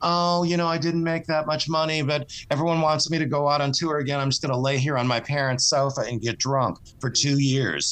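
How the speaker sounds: plain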